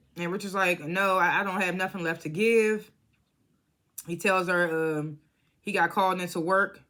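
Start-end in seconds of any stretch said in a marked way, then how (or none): none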